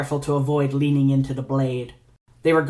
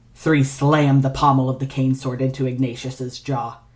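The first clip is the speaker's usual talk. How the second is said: ordinary delivery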